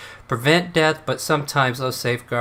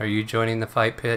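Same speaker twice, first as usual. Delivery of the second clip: toneless, flat, deadpan monotone; 3 dB quieter than usual. Retelling how she greets newcomers, speaker gives a monotone greeting. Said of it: "So monotone as she greets you".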